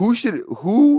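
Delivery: loud, breaking, very high voice. Talking to an audience while debating which receiver goes first, voice cracking. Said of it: "voice crack".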